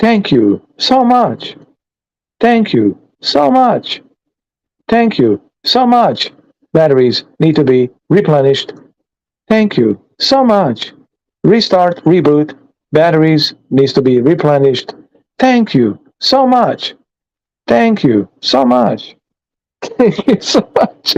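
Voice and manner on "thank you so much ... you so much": mechanical robotic voice, looping on repeat. Imagining being a robot repeating thanks to Holly: robot voice. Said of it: "Imagine if I was a robot".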